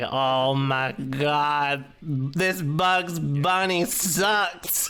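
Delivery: very slow drawl, every word elongated, "god" stretched out. Imitating Hook, who elongates everything: Hook impression, words drawn out. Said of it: "he like elongates everything".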